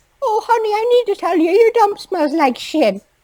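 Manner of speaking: put-on very high, sugary, sweet old-lady voice. Acting out a sweet old lady complaining about a dump: sweet old lady voice. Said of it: "The sweet old lady is ju-, just walks up and she's like".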